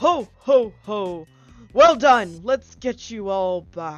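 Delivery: loud, booming voice as if from above. Voicing a voice heard from overhead after the players' victory: Santa voice. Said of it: "you hear the voice that you all have come to, uh, love and respect".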